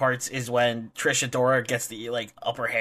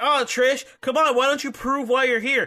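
put-on upset wrestler yelling, higher; 12 semitones higher than usual. Retelling how Deppen got in Trish's face: imitating Deppen yelling upset. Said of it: "Why are you yelling at her for?".

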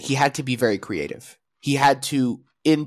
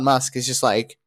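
ordinary talk, nothing marked

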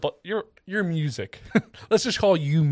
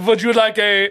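loud, high, put-on German accent; 6 semitones higher, 6 dB louder than usual. Playing a French waiter as a joke: put-on German accent. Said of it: "that was a German accent".

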